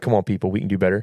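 ordinary delivery

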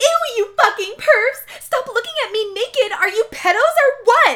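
very high, shrill, very loud screaming. Reading a story aloud, the narrator's line as she puts on a towel: screaming. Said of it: "I screamed".

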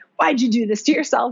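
acted pissed-off voice. Voicing own inner doubting voice before press: imitating a pissed-off voice. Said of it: "kind of pissed off, like, ... voice comes in".

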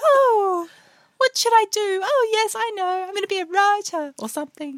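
put-on very high-pitched young adult voice. Asked for advice to her younger self, imitating her own younger high voice. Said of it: "it was somehow like really high-pitched".

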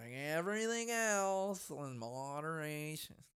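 very soft, hushed, drawn-out put-on nagging woman voice. Speaker repeats a line in their put-on annoying nagging woman voice. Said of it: "That's my annoying, nagging woman voice".

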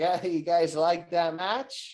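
slow, spoken through the nose. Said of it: "he talks, like, all nasally".

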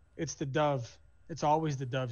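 ordinary talk, nothing marked

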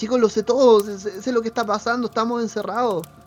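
loud high-pitched yelling. Voicing a character running down the stairs to the others: shouting.

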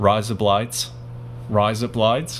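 put-on Australian accent, slightly British. Asked to do it, repeating the phrase in an Australian accent. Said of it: "almost a Britishy kind of sound".

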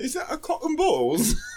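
very high, nice put-on English accent. Imagining a newbie's first match in the Crucible, nice English accent. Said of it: "with a nice English accent".

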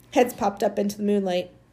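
ordinary delivery

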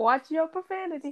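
high, meek, little scolding tone.

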